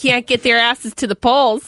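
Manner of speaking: put-on Midwestern accent. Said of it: "This is a Midwestern accent".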